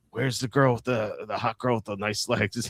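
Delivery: put-on, too-loud drunken whisper. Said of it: "Walt, stop yelling".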